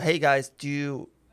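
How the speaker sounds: ordinary talk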